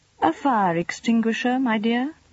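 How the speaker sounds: dry. The ambassador answers his wife's question about his ruined clothes, dry. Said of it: "answered the ambassador dryly".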